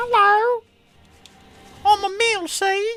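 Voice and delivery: put-on very high small boy voice, pitch way up. The speaker tries out a voice for Emil, a wee young lad's voice. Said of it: "a wee young lad's voice".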